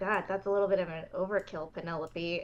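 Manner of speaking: low, very quiet mutter under the breath. Playing a character reacting to a welcome to Palisade Hall, muttered under her breath. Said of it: "under her breath".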